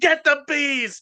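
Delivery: very high, shrill put-on shout. Imagining calling out to the other car: pretend yelling to another car. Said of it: "Imagine that if I yelled to the other car".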